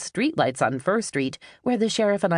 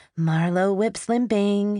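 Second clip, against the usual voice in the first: bright, cheerful, upbeat, pitched-up voice; 5 semitones higher than usual. Reading the line of a woman bringing in the mail, in a cheery voice. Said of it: "she said in a cheery voice".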